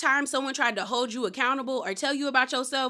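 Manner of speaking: normal talking voice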